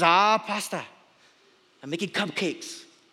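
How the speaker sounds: slow, terrible put-on Hawaiian accent. Retelling what a Hawaiian auntie said to the senior pastor, bad Hawaiian accent. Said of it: "Try my best Hawaiian accent".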